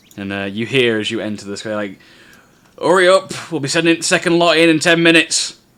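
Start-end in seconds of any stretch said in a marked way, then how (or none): 2.8-5.6 bossy, loud, high-pitched barked shouting. A narrator voices a guy ordering humans sorting plans, shouting commands. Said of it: "he's shouting and barking commands".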